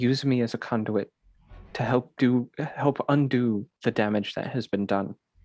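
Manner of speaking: very quiet, hushed murmur under breath. Voicing a character praying over a defiled chapel: very quiet prayer under breath. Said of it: "so very quietly under his breath, he says".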